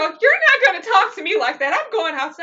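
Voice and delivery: high, offended, indignant, affronted tone. Retelling a comedy bit where a partner walks out: imitating Lisa offended. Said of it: "And she go".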